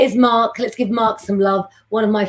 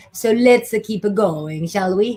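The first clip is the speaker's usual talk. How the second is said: fake, put-on Italian accent. Moving on to the next part, the speaker slips into an italian accent. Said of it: "I don't know why I'm talking in an Italian accent".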